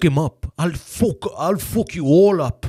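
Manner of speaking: combative, high-pitched leprechaun voice. Playing someone trying to fight, doing a McGregor leprechaun voice. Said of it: "McGregor leprechaun thing".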